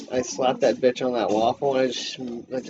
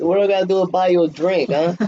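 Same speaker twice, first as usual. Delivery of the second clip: put-on Italian-guy voice, higher pitch; 6 semitones higher, 6 dB louder than usual. Retelling a show's bar scene, speaker voices Vito like a fat little Italian dude. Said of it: "the Vito goes like like a fat little Italian dude".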